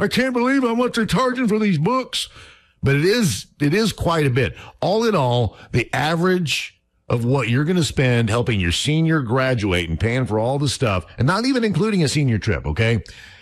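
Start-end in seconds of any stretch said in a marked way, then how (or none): 0.0-2.3 put-on very high-pitched, rattled-off old man voice. Speaker talking to parents about senior-year costs does an old man voice. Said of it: "I know I sound like an old man going".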